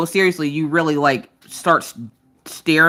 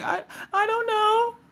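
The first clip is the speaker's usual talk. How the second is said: mock very high, very drawn-out, teary child voice; 7 dB quieter than usual. Retelling how the child answered while tearing up: imitating a child tearing up. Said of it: "He starts tearing up".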